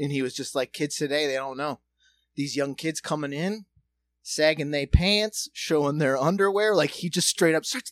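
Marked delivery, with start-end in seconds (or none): none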